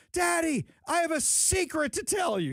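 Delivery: put-on very high, slow, stretched-out child's cry. Recalling their young daughter running into a dining room; imitating a child screaming. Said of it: "She's screaming this across the entire dining room".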